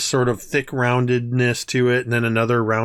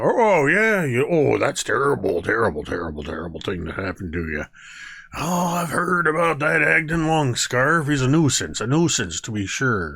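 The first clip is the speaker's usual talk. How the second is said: croaky, croaking frog-like creature chatter. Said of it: "these are the things that are going".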